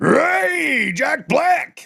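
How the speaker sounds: very high, creaky, raspy rock shout, one word drawn out.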